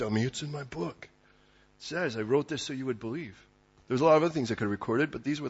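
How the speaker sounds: put-on old fisherman voice. Explaining why John wrote his gospel, voicing his answer: John as salty old fisherman. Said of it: "old salty fisherman, probably talks a little like this".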